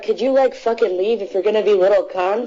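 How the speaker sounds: put-on furious, unhinged angry ranting, completely losing control. Retelling how someone at a comedy show called out people on phones: imitating an angry outburst. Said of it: "just went nuts".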